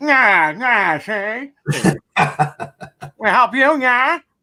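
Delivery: put-on very slow old-movie star voice, every word drawn out. Joking about answering the car door: Edward G. Robinson impression. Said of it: "it could be like Edward G. Robinson".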